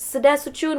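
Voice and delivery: high, polite, courteous call, yelled out loud. Retelling yelling goodbye in Armenian at a group: retelling own yell. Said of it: "I just yell".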